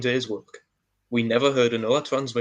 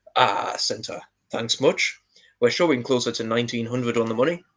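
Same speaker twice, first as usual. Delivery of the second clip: cool, calm fighter-pilot radio voice. Retelling Walt keying the radio mic once again to reply; imitating Walt's fighter-pilot voice. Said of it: "in his most fighter pilot like voice".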